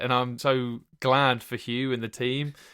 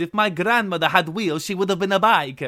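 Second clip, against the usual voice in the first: loud, high, full-tilt put-on Italian accent; 5 semitones higher, 5 dB louder than usual. Quoting a line from a YouTube video, Gino D'Acampo impression. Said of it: "he sounds like um, Gino D'Acampo".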